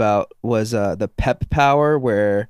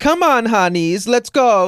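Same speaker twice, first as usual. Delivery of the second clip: high-pitched, super-feminine, flamboyant jester voice; 12 semitones higher, 4 dB louder than usual. Describing a favorite game character, a Spanish jester, in a feminine Selvando voice. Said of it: "he like talks like that the whole time".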